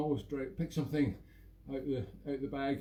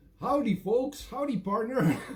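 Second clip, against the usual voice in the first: loud, hammed-up fake American accent; 9 semitones higher, 8 dB louder than usual. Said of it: "it's supposed to be an American accent, I forgot".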